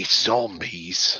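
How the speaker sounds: hushed whisper. Sharing a guess about the mortuary with another speaker: whispering. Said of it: "and I whisper this".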